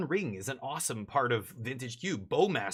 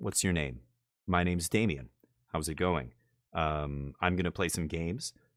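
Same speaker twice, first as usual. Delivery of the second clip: intimate close-mic talk, as if into an ear; 8 semitones lower than usual. Showing how to talk into a microphone as if it were an ear, quiet close-mic speech. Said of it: "I'm not speaking very loudly because your ear is right in front of my face".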